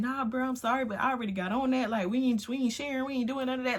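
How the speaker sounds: worked-up, high, heated ranting voice. Retelling how a man went off on his brother: imitating someone going off. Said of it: "he's going off on his brother".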